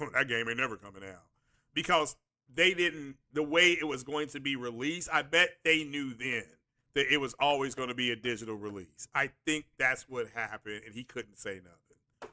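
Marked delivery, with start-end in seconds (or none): 0.0-1.2 in-the-know tone with attitude. Retelling a store clerk's answer with attitude: imitating a clerk's attitude. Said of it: "He had an attitude like".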